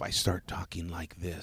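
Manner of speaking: put-on FM radio announcer voice. Showing how talking changes when someone is next door: put-on FM radio voice. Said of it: "You go into your F M voice".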